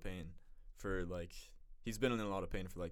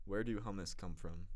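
ordinary talk

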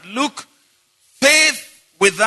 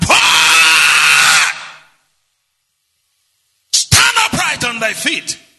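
put-on hollering shout, slow and swooping; 3 semitones lower, 4 dB louder than usual. Retelling how Paul healed a man: imitating Paul hollering.

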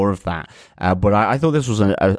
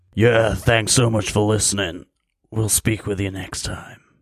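gruff, hard, put-on comic-book vigilante voice. Signing off a podcast episode: gruff Punisher voice. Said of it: "I'm trying to do my Punisher".

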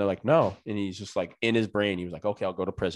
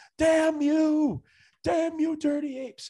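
very high, despairing, drawn-out scream. Retelling a movie ending where the main character screams: imitating a scream. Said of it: "drops to his knees and screams".

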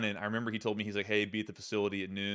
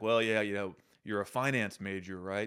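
put-on grandfatherly voice. Retelling what team owner Robert Kraft said to him, in a grandfatherly Robert Kraft impression. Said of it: "he's this grandfatherly figure".

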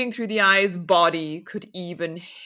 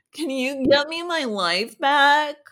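higher-pitched put-on valley girl speech; 7 semitones higher than usual. Retelling a character's question from a story; valley girl voice. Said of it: "I guess she's like Valley Girl".

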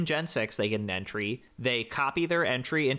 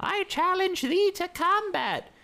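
put-on very high, tiny toddler-knight voice, slow grand drawl. Describing a Pokémon's manner, voicing Litleo as a toddler pretending to be a knight. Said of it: "the toddler pretending to be a knight".

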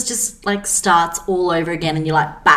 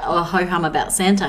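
ordinary delivery

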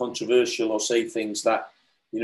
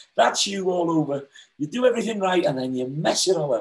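play-acted, high-pitched, furious ballistic ranting; 7 semitones higher than usual. Retelling his wife's reaction to his news, mock-angry rant. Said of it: "And she went ballistic".

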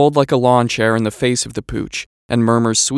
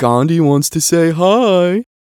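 put-on high, cutesy, affected baby-talk voice; 5 semitones higher, 3 dB louder than usual. Neighbor on the front porch holding up his dog, calling to Gordon, affected baby voice. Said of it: "in a kind of affected baby voice".

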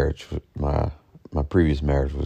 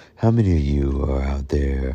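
radio announcer on-air delivery. Podcast host putting on a radio voice to address listeners. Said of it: "I gotta put my radio voice on".

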